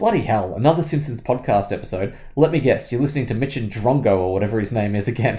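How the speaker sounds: normal talking voice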